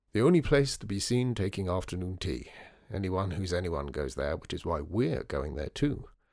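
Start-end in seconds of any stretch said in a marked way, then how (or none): none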